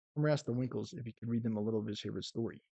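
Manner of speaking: plain reading voice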